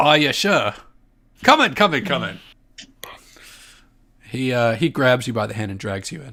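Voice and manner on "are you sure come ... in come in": loud, swooping little Scottish gnome voice. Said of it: "Little Scottish gnome".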